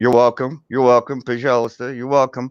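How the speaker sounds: acted-out sarcastic mock politeness. Retelling holding a door for a minute in russia: retelling sarcastic 'you're welcome'. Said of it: "I was being sarcastic".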